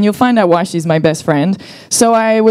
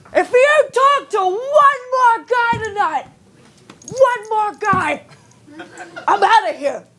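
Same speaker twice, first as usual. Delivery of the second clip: put-on drunk voice, higher; 12 semitones higher, 4 dB quieter than usual. Retelling what the boyfriend said while drunk: imitating drunk boyfriend. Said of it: "he's drunk, of course".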